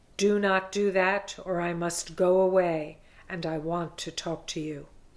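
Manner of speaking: growl of a heavy voice. Narrator reads a voice in the cave speaking to the hermit, heavy growling voice. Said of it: "a heavy voice, like the growl from the depths of the earth".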